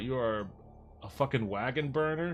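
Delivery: ordinary delivery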